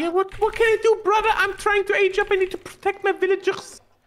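squeaky, toy-like voice. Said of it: "Why are you turning into a squeaky toy?".

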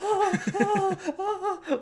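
very high, gleeful vampire moan.

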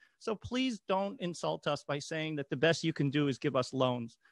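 normal talking voice

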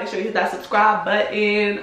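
ordinary delivery

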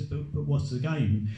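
normal talking voice

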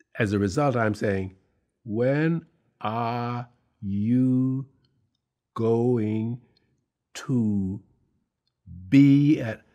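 slow, halting reading. Retelling a stage audition, imitating own old slow reading. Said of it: "now I'm reading like I read when I was in school".

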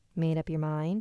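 ordinary delivery

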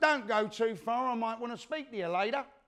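put-on, mild called-out jab. Retelling what was shouted at him while walking out of a club: imitating someone shouting. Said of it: "he shouts".

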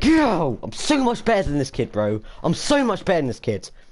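loud, high, hyped-up gamer yelling. During a game, boasting about being better than this kid, shouting loudly. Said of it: "How loud was I? I need to chill".

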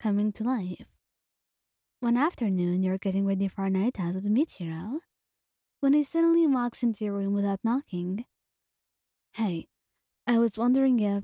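ordinary delivery

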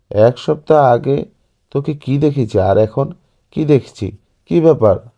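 startled, loud, almost shouting. Narrating a story, the aunt sees her niece and speaks to her: almost shouting. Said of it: "প্রায় চেঁচিয়ে বললেন".

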